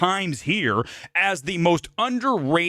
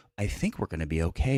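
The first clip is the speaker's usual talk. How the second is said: weak, soft, limp, unconvincing delivery; 11 semitones lower, 6 dB quieter than usual. Mocking an actor's line delivery: imitating a weak beta line reading. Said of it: "Instead, it's like".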